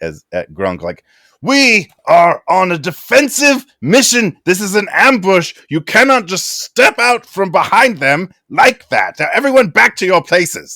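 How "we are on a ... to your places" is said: very high, loud, shouting wizard voice. Voicing a wizard scolding an ally during an ambush: wizard yelling. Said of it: "the wizard, yells at".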